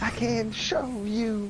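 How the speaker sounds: high, very slow, eerie, ominous demon-like voice.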